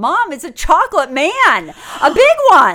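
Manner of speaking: very loud, sing-song, swooping high pitch. Retelling how a boy in a stroller turned around and called to his mom, in the loudest voice possible. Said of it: "in the loudest voice possible".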